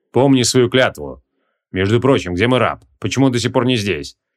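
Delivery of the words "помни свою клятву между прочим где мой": usual speaking voice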